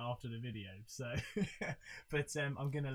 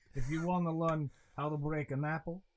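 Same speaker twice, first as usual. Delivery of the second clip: raised voice with put-on Russian accent throughout; 2 semitones higher, 6 dB louder than usual. Quoting how a man introduces his apple trick, on request, Russian accent. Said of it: "I kind of want to hear you do a Russian accent".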